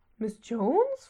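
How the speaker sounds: in alarm. Tess reacts to the suggestion of calling miss jones over, alarmed. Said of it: "fragte Tess alarmiert".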